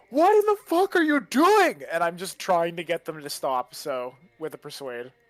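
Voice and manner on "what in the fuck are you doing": very high, loud scream. Player's character trying to make the others stop, screaming into the microphone. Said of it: "I'm just gonna scream into the microphone".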